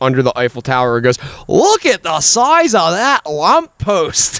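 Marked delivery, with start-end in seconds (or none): 1.5-4.4 heavy, thick Scottish brogue, very drawn out, slow, high. Speaker quoting a Scottish woman under the Eiffel Tower, in a very strong Scottish accent. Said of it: "very extremely Scottish chick walking through Paris".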